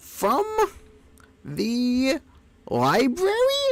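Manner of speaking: very high, squeaky, swooping character voice. Speaker redoes a character line he once voiced, squeaky voice. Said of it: "It wasn't quite this squeaky".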